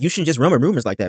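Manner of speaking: ordinary delivery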